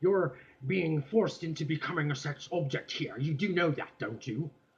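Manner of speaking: put-on British accent with an irritated tone. Quoting a female reporter questioning a model, british accent. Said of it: "she's got that whole uh, British British accent".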